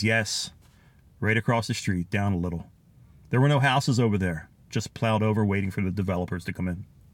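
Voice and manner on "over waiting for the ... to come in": ordinary talk, nothing marked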